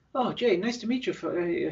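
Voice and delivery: put-on British accent. Retelling how a visiting friend greeted jay after the show, imitating a british accent. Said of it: "in his British accent".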